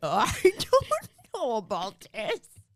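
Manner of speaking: loud, slow, drawn-out, swooping, heavy sing-song delivery. Imitating a friend who slips into a Bane voice when drinking: Bane voice. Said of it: "whenever she gets Bane, she goes like".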